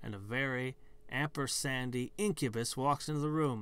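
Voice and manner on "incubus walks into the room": ordinary delivery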